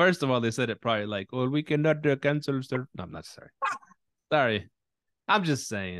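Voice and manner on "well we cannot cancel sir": botched, put-on Filipino accent. Retelling what the company said about cancelling, in a bad filipino accent. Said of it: "I was trying to do a Filipino accent".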